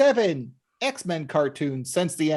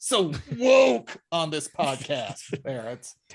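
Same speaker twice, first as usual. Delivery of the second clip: slow, exaggerated fake venomous tone, laid on thick; 3 semitones lower than usual. Repeating a line after saying it lacked venom: mock venomous delivery. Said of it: "I didn't say that with enough venom".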